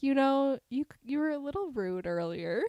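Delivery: put-on very calm, unruffled, composed delivery. Retelling a dream, quoting own words to the other speaker: imitating own very calm voice. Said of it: "in, like, a very calm voice".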